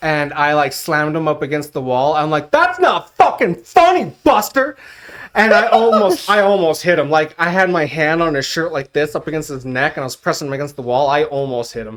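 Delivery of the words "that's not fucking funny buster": furious, cursing outburst, voice very high. Retelling a time at Domino's when a kid tried tripping him, reenacting his anger. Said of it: "one time I was that angry".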